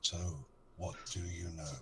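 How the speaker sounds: very quiet, soft voice, spoken close to the ear. Dropping silently behind a character and speaking in his ear: very quietly. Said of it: "I'll just say very quietly in his ear".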